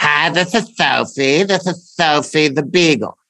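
silly voice of a pet dog. Showing how the family voices their dogs: Sophie the beagle's voice. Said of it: "So Sophie's voice is".

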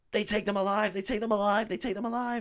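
mock very high scream, repeated over and over. Retelling a film scene, imitating Ripley screaming. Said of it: "she's just screaming".

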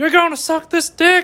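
very high-pitched put-on voice. Doing a Biden impression in a comedy bit about a debate. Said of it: "That's my Biden impression".

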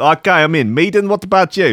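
put-on South African accent. Acting out a Dragon's Den pitch: Duncan Bannatyne with a South African accent. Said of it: "They're both South African".

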